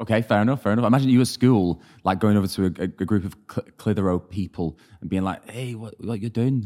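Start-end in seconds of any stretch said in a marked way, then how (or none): 5.5-6.7 terrible fake Scottish accent. Imagining the listener at school greeting a group of Clitheroe people: bad Scottish accent. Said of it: "that's my terrible. Scottish accent".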